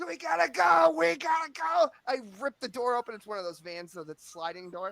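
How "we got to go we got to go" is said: high, loud yell. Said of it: "So I'm yelling".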